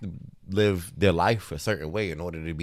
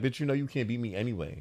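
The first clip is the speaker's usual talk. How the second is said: imitated taunting tone, higher and quieter; 5 semitones higher, 5 dB quieter than usual. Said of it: "She was just kinda, like, fucking with her".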